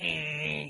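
mocking interjection "eh". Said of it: "me in the middle of Tom's voice going".

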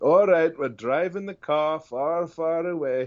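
high cartoon ogre voice. Showing one of the voices the speaker's kids love: Shrek voice. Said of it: "my kids love me doing Shrek and Donkey".

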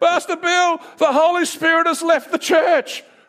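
screamed out, very high crying scream. Retelling how a man burst into the office: imitating a man screaming. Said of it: "He's screaming to me saying".

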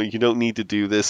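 ordinary delivery

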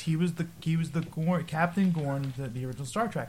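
ordinary talk

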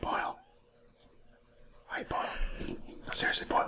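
soft, hushed whisper. Calling to someone by name, whispering. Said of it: "Are you whispering to me?".

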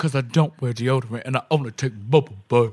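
voice dropped very low, way down in pitch. Doing a requested cartoon quote about the bubble bath: Hormone Monster voice. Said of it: "Can you do the Hormone Monster quote about the bubble bath?".

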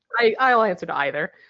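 plain

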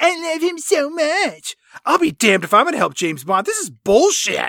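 sulky, pouty complaining. Retelling a film scene after Pam hears about James Bond: pouty Pam voice. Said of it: "Pam gets all pouty".

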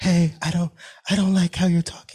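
soft, high voice. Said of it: "he had a soft tone".

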